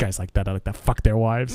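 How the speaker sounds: muttered under the breath. Retelling being cut off in traffic with mother beside, muttering under breath. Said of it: "I mutter under my breath".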